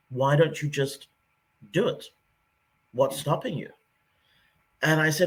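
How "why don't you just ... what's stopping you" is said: put-on sarcastic British accent. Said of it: "in a very typically British sarcastic way".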